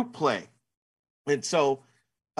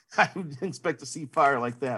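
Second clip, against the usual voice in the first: usual speaking voice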